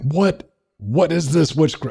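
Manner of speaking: acted, bewildered, startled scream, pitched very high. Retelling the feeling of hot water on sore fingertips: imitating a confused scream. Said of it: "That was a brain-confused scream".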